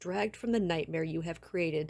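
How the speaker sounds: plain reading voice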